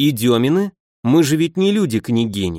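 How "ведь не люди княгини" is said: plain reading voice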